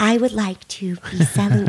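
tiny, small little voice. Describing trial footage where Jodi holds up a t-shirt, in Jodi's soft little voice. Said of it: "She does everything in this soft little voice".

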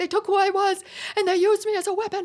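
crying through sobs, pitched very high. Describing a show scene, acting out a character sobbing after fighting his brother. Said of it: "he just starts sobbing".

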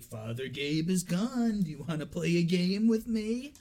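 slow, smug, needling taunting tone. Retelling how Asmodeus taunts Father Dan: imitating Asmodeus taunting. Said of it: "he's taunting Father Dan".

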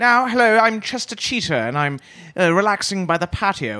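put-on British accent. Describing a mascot's new version, speaker talks as Chester Cheetah in British. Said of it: "because now the new version is British".

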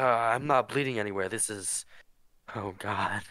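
delirious, disoriented and out of it. Game master voices an injured man who was just asked where it hurts, delirious. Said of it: "just seems delirious now".

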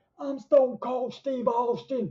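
put-on voice squeaked out way up high. Showing off a hidden talent of doing a voice: Stone Cold Steve Austin voice. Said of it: "my only hidden talent is that I can do the voice".

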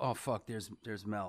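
low, quiet mutter. Retelling hearing the dad mutter on seeing someone: imitating dad muttering. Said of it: "Like, like, like that".

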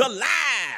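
high, dramatic reality-star-style cry. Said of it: "as Candy would say in Real Housewives of Atlanta".

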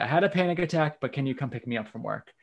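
normal talking voice

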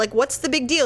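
usual speaking voice

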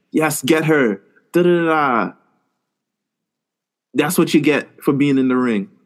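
put-on strong Jamaican accent. Retelling how a neighbor's mom cheered at a match, strong Jamaican accent. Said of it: "in the most Jamaican accent".

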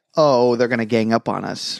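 ordinary delivery

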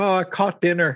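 imitated Irish accent. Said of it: "speaking in an Irish accent".

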